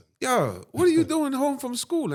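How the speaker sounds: put-on heavy Jamaican accent. Retelling what the grandmother asked when the speaker ran home: thick Jamaican accent. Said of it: "in a thick Jamaican accent".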